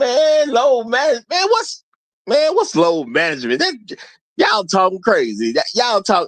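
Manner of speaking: casual, high, excited, loose, scoffing street-talk voice.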